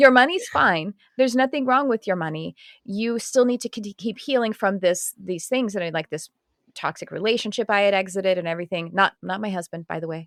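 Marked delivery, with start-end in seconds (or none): 0.0-2.6 put-on woman's Australian accent, high and raised. Speaker quotes a woman pulling cards for her: her Australian accent. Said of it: "I shouldn't do her accent".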